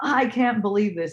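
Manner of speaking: acted woman's mad outburst, fuming in disbelief. Retelling a woman at a market reacting to no mask: imitating an angry woman. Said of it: "she was so mad".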